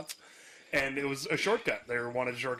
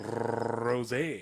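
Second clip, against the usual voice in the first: posh, snooty, drawn-out rosé; 4 semitones lower than usual. Offering something called rosé, saying the word fancy: fancy, posh 'rosé'. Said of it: "You got to say it fancy like that".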